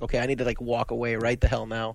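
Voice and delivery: ordinary talk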